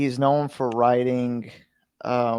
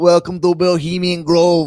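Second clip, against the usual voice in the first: put-on Austrian accent, higher and louder; 6 semitones higher, 8 dB louder than usual. Picturing a guest giving an opening speech: Arnold Schwarzenegger accent. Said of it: "his accent and his voice just being like".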